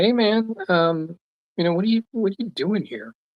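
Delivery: mock try-hard cool voice. Retelling walking up to an intruder, imitating trying to act cool. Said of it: "I'm trying to be real cool".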